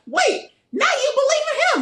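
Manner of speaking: play-acted yelling, pitched very high. Retelling how she yelled at another person: imitating someone yelling. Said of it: "she's yelling at Dakota like".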